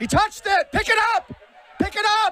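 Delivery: very high-pitched, shrill, loud yelling. Reacting live to a punt during a game, yelling. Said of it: "Sorry for yelling there".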